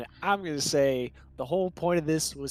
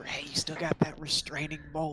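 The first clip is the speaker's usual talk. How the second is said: quiet, hushed whisper under the breath; 6 dB quieter than usual. In a game scene, sliding up to another character, whispering. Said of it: "I slide up to Tom Nolan and whisper".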